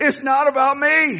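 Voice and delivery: high, laughing yell. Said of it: "I'm yelling it".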